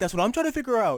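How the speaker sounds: play-acted giggling, high and loud, laughing through words. Retelling a woman who laughed the whole time she answered, imitating her laughing while talking. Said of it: "As she's just laughing this whole time".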